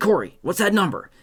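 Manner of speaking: pissed-off, loud voice. Retelling asking his wife for a number, imitating own angry tone. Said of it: "I was super pissed".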